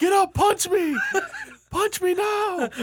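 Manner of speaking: very high, loud yell. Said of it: "loudly yelling at Undertaker".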